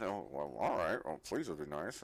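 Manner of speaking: very low mumble, muttered under the breath. Game master voicing a character asked to shut the door, mumbling under her breath. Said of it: "Squirt's just mumbling under her breath".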